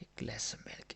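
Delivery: whispered voice.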